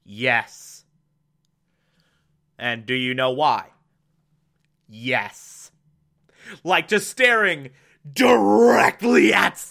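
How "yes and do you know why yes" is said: put-on deadpan voice, much lower. Recapping a show, speaker imitates Nina answering a man while facing Stan, deadpan. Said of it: "just deadpan says".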